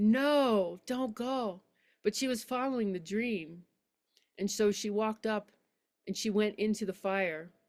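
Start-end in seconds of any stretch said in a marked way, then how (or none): 0.0-1.6 screamed, pleading, long drawn-out no. Retelling a man's plea as his beloved walks to the fire: imitating a scream. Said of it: "he screamed".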